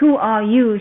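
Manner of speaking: loud, demanding tone. Narrator reads the gate's guardian confronting an intruder, demanding. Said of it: "she demanded".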